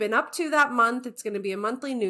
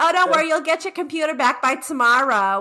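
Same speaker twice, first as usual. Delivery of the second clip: put-on sympathetic, high, raised voice with New Jersey accent; 5 semitones higher, 5 dB louder than usual. Retelling sympathetic plane passengers after a lost computer: New Jersey accent. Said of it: "with their New Jersey accent".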